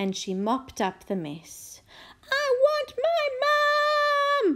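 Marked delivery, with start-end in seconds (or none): 2.3-4.6 very high, slow yell, stretching the word my. The little princess, after spoiling her best painting, calls out: yelled. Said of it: "yelled the little princess".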